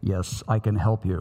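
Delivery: loud deep voice. Telling a joke, answering the fallen hiker's cry for help in God's booming voice. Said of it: "a booming voice said".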